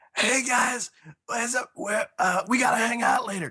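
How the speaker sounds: very high, blown-out, used-up voice. Imitating a friend who has lost his voice by convention night: imitating Steve Avery's lost voice. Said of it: "he always sounds like this".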